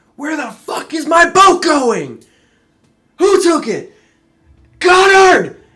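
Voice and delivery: very loud, very high, shrill, furious screaming. Voicing a character yelling as his boat is taken: screaming angrily. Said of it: "And he's screaming".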